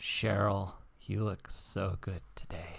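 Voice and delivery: saliva-heavy mouth sound. Demonstrating a compliment to Cheryl, said with a lot of saliva. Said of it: "you say it with a lot of saliva in your mouth".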